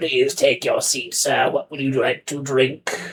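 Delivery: skeletal, head-waiter style skeleton voice. A narrator voices the skeleton maitre d' seating a guest, in skeleton maitre d' voice. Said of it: "led by like a skeleton maitre d'".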